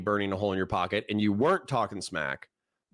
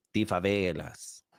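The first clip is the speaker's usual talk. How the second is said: favelas said with a put-on Latin American Spanish accent; 2 semitones lower than usual.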